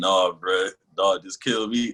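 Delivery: put-on crying voice. Retelling a scene where Reiner begs on his knees: imitating Reiner crying. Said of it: "on his knees, like, crying".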